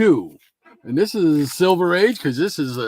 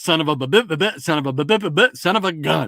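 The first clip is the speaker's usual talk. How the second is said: stuttering cartoon voice. Speaker retelling an old cartoon blooper; Porky Pig stutter. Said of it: "he goes".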